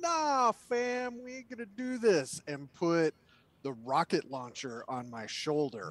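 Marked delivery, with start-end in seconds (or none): 0.0-2.4 very loud, booming, high-pitched. A player faces a staring bar crowd after a fight: very loud. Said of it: "I am very loudly going to say".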